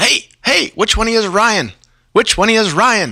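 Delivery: very high, hailing shout. Retelling how a voice from behind the boat called out: imitating someone yelling. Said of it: "this voice just yelling".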